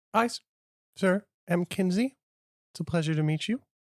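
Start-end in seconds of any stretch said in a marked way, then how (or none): none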